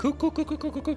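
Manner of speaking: cooing like a bird. Noticing they sound like a bird while repeating a word, cooing like a bird. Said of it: "I sound like a bird".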